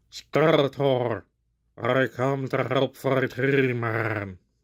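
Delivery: very slow, drawn-out drowning gurgle. Testing whether his voice holds up, the speaker attempts Merman: drowning-sounding Merman voice. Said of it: "You just gotta sound like you're drowning".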